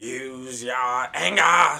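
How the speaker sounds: put-on villain voice. Asked for an impression without naming it, the speaker does an Emperor Palpatine impression. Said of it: "So the Emperor Palpatine?".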